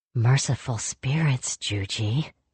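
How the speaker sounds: muttered under breath. Kavik, watching Jujinta work on the sobbing kids, mutters under his breath. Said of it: "Kavik muttered under his breath".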